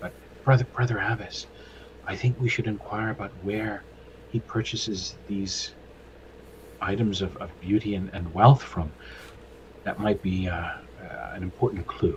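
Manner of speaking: spoken in a whisper. In character, speaking into another character's ear so she can overhear, whispering. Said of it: "I'll whisper in Brother Abbas's ear".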